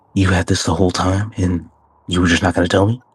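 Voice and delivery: whispering in a character voice. Voicing a character who walks over and speaks into another's ear: whispering in character. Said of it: "and just whisper in his ear".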